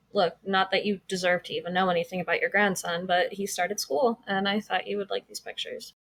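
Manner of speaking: usual speaking voice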